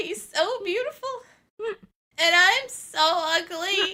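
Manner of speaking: over-the-top pathetic voice, very high and loud. Recalling curling into a ball and saying this, imitating a really pathetic voice. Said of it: "in this really pathetic voice".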